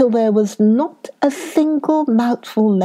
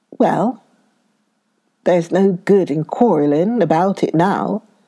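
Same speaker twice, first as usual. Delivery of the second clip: usual speaking voice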